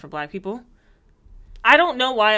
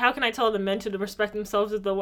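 plain

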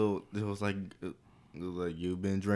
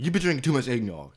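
a little frantic, high, blurted in a rush; 5 semitones higher, 8 dB louder than usual. Retelling the son's line from a movie: imitating a frantic son. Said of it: "was like a little bit in a frantic".

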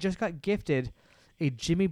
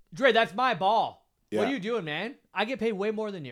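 mock, high-pitched yelling; 6 semitones higher than usual. Hosts act out a basketball player scolding a teammate, imitating someone yelling. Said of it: "I'm gonna yell".

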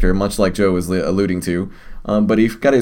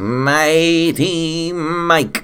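high, otherworldly alien voice, mighty drawn out; 8 semitones higher than usual. Introduced by the podcast host, the co-host says his own name in an alien voice. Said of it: "that was a somewhat alien voice you got going on there".

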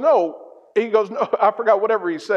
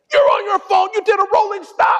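very high, livid, angry yelling; 11 semitones higher, 3 dB louder than usual. Retelling being pulled over for a rolling stop, imitating a policeman yelling. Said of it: "He's yelling at me".

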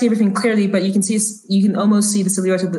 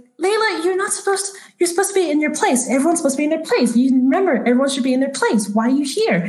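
woman's voice, pitched higher; 7 semitones higher than usual. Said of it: "she looks at the little girl's like".

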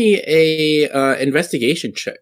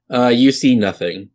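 ordinary delivery

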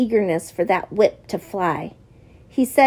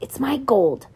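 whispered, higher pitch; 3 semitones higher than usual. The narrator speaks while hearing the strap hit flesh, whispered. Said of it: "I whispered".

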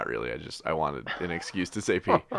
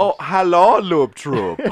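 put-on German accent, very high and very loud; 11 semitones higher, 9 dB louder than usual. Asked by a co-host to use the catchphrase: put-on German accent. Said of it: "Matt's been speaking in a German accent".

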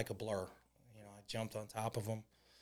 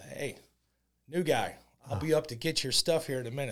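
put-on, loud, hollered yell, raised voice; 4 semitones higher, 6 dB louder than usual. Retelling what a prisoner called Fat Joe shouted from the day room: imitating someone yelling. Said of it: "he yells".

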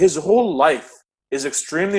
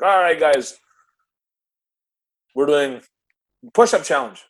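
put-on Jamaican-accented speech. Act out him walking into a sales meeting and addressing everyone, in Michael Lee-Chin's Jamaican accent. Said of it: "Jamaican accent. He's like".

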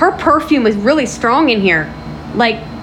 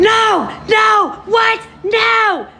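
very high, drawn-out, blood-curdling screaming; 9 semitones higher than usual. Retelling what the neighbors could hear, re-enacting screaming bloody murder. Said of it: "I was legit screaming bloody murder".

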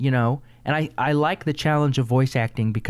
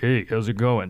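deep-set voice of a huge, burly, hulking man; 3 semitones lower than usual. Explaining that voice work lets you play anyone, in a big hulking guy voice. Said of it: "I could play like a big hulking guy and be like".

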